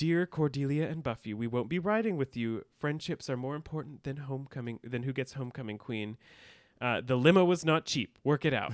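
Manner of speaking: normal talking voice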